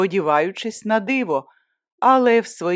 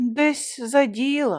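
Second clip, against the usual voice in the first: weary, heavy sigh, slightly higher pitch; 6 semitones higher than usual. Narrator reads Yaroslava's reply to the narrator's scolding, with a heavy sigh. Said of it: "важко зітхнула вона".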